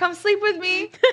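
gentle put-on yelling, high. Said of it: "I literally yell into the hallway".

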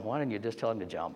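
muttered under the breath. Retelling a remark made to a sergeant, muttered under the breath. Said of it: "under my breath saying to him".

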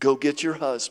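soft, gentle, kindly, low fatherly voice. Retelling a story, acting out a gentle, fatherly line to a woman. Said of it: "so gently, like a father, he goes".

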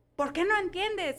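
acted, high-pitched, yelling voice. Retelling a meme of a mom helping her son with math, imitating her yelling. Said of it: "because she's yelling at him".

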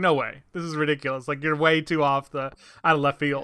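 ordinary talk, nothing marked

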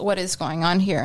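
ordinary talk, nothing marked

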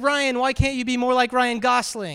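ordinary talk

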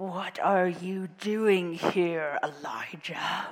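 mountain troll voice. Reading a Bible verse, imagining God as a troll guarding his mountain. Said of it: "God's voice sort of sounding like a troll guarding his own mountain".

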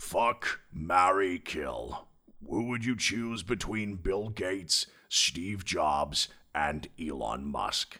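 heroic robot leader voice. Reading Tick's question aloud as a game prompt, in Optimus voice. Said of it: "so we'll do Tick's question as Optimus then".

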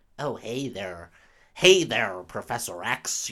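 put-on American accent. Imitating her American accent in Dark Phoenix: put-on American accent. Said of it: "Is she putting on an American accent? ... Oh, yes, she is".

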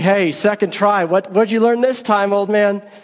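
light, mocking, playful sarcastic teasing. Retelling how people teased an old man rereading Revelation; retelling a playful, sarcastic jab. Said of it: "a little bit playfully, a little bit sarcastically".

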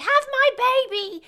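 creepy, shrill monster shouting. Describing a game's creepy monsters yelling at the player: imitating monsters shouting. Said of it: "shouting, like".

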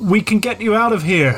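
half-shouting. Calling through thick glass to someone trapped behind it, semi-shout. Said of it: "I'm gonna sort of do that sort of semi-shout thing".

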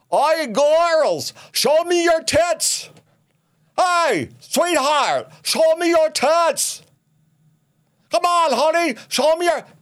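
very high-pitched, acted-out yelling. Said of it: "and he's yelling".

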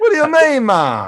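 bad put-on Jamaican accent. Answering a co-host's ban on the accent: bad Jamaican accent. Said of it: "I'm banning bad Jamaican accent".

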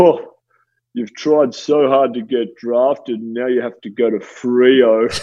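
slow, lumbering, dopey big-bloke voice, Freo stretched. Retelling a phone call after being drafted to Freo, imitating a big dopey ruckman. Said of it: "I'll try and put on his voice here".

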